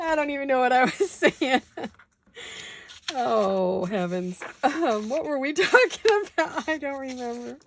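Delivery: laughing while talking. Apologizing to the ladies while crafting: laughing while talking. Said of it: "I'm having a tickle fest".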